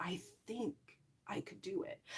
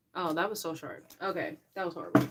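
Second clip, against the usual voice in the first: normal talking voice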